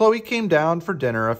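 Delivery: ordinary delivery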